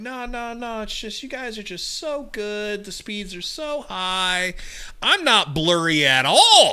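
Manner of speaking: mock heavy sarcasm, very high, very slow. Acting out a joke call to the internet company: mock sarcastic tone. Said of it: "you're just really sarcastic".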